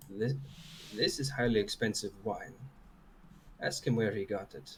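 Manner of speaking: hushed whisper, close to the ear. Whispering in character into a companion's ear after tasting wine: whispering. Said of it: "just sort of whisper in his ear".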